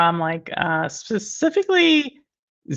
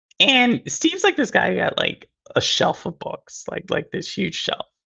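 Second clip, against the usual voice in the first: plain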